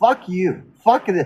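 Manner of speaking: plain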